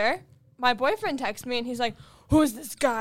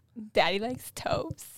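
bad sultry voice, soft, whispered and breathy; 3 semitones lower, 6 dB quieter than usual. Urged by the others to do the voice, on a countdown; bad sexy voice. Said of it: "sexiest voice I've ever heard".

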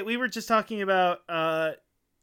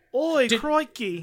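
poor, pitched-up, put-on Australian accent; 6 semitones higher, 3 dB louder than usual. Answering a remark on a poor accent with a bad Australian accent. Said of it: "your Australian accent's very bad".

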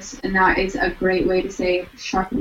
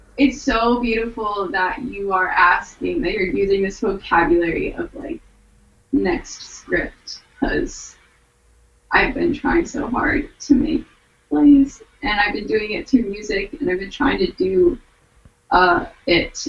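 moved, emotional voice on the edge of crying. Answering a question about the next script, emotional, near tears. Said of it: "I'm so emotional".

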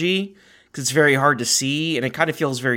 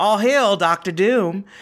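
showy, high, put-on southern belle voice; 7 semitones higher, 3 dB louder than usual. Retelling a cast member's ride pre-show line: imitating a Southern belle cast member. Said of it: "when the Southern Belle did it for us".

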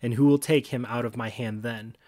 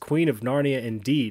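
plain

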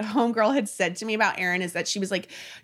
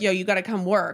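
ordinary talk

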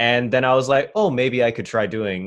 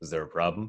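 very quiet, dropped-down, deep, low voice; 5 semitones lower, 9 dB quieter than usual. Describing what they would do when asking: dropped voice. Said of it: "I would drop my voice".

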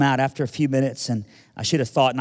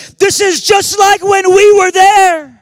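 shrill, very loud, high-pitched yell; 14 dB louder than usual. Retelling an elderly man in a movie theater during a war scene, imitating someone yelling. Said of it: "He just yells".

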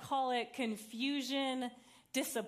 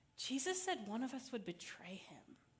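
hushed, quiet tone, kept down; 8 dB quieter than usual. Voicing a disciple speaking up at the table: hushed tone. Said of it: "in a more hushed tone and says".

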